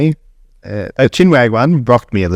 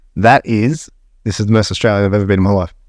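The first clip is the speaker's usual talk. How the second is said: usual speaking voice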